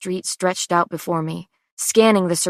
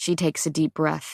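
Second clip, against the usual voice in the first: ordinary delivery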